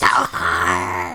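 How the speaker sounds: whispered loudly. A player calls out to Novar, who is big again: loud whisper. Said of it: "It's like a loud whisper".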